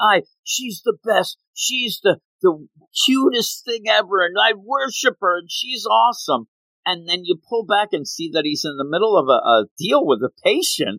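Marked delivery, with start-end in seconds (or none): 0.0-6.5 mock-yelling, put-on, slower. Describing a TV scene, the speaker imitates an OB-GYN, retelling a doctor yelling. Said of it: "he starts yelling".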